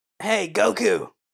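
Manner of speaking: raspy, high character voice. Imitating how grown-up Krillin sounds: raspy adult Krillin voice.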